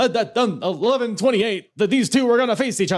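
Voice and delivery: high, loud ring announcer call. Retelling the commentary from behind the camera: Gary Michael Capetta ring announcer voice. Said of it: "he's doing his ring announcer thing".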